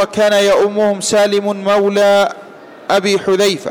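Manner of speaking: ordinary delivery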